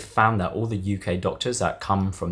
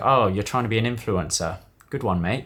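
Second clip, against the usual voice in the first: dry, sarcastic, mocking tone. Imitating people back in the uk discouraging someone: imitating a sarcastic remark. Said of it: "It would be more like a sarcastic".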